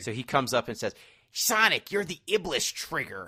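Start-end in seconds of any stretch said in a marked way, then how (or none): 1.3-3.3 slow, drawn-out, edgy and mean delivery. Retelling a game's plot, the speaker plays the villain confronting Sonic: edgy, mean Silver the Hedgehog impression. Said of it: "edgy and mean".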